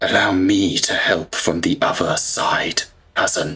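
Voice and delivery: hushed, close whisper. Voicing a figure who speaks in a player's ear: whispering voice in ear. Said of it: "a voice whispers in your ear".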